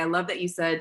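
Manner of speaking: ordinary delivery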